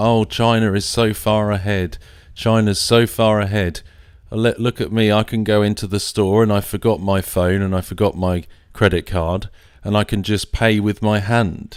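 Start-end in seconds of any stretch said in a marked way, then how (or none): none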